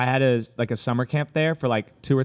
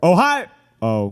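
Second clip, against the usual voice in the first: surprised, startled, caught-off-guard tone; 5 semitones higher, 6 dB louder than usual. Speaker explaining how a greeting comes out when caught off guard, surprised greeting. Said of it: "sounds like you were surprised to see someone".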